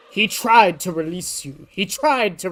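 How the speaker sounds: botched, missed attempt at a put-on cartoon voice. Trying out cartoon voices and admitting they don't come out right: failed Orville impression. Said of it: "I can't do Orville either".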